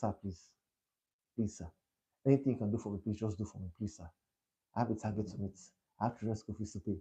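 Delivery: soft, desperate, pleading begging voice. Telling how a sales colleague under pressure pleaded with a prospect, imitating a colleague begging. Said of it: "He started to beg".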